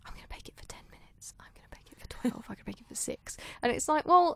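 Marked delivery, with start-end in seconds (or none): 0.1-3.4 very quiet, secretive whisper. Retelling how the contestants kept their timings secret: imitating whispering contestants. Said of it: "all of them were sort of whispering".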